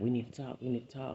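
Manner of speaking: ordinary delivery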